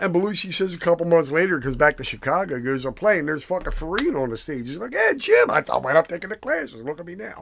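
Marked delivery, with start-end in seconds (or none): 4.9-7.4 animated, high, sing-song, swooping character voice. Retelling what the actor said after acting classes: Dennis Farina impression. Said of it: "your impression of Dennis Farina".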